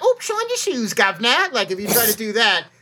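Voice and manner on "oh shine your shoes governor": very silly, pitched-up, put-on British accent. Telling Americans how to do a British voice, demonstrating a silly fake British accent. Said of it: "make your British voice sound very silly".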